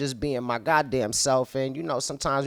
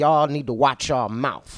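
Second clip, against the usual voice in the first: mock irritated, offended voice; 3 dB louder than usual. Retelling how Lazy warned them, imitating Lazy's unhappy warning. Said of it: "he didn't say it in no, no happy way".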